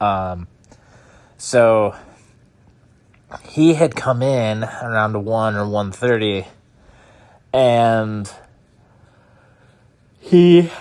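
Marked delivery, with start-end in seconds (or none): 1.4-10.7 talking through a yawn. Recounting when he came in late at night, yawning while talking. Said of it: "I can't stop yawning".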